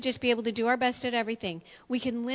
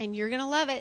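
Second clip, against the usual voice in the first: dry, tongue-in-cheek sarcastic tone. Introducing the first step in combating shame: sarcastic. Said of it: "I say sarcastically".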